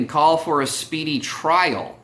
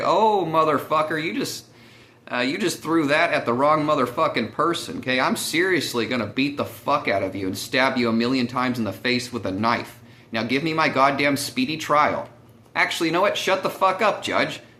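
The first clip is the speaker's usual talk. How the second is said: ordinary talk, nothing marked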